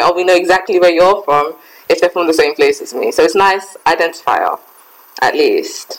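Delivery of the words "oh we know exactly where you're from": plain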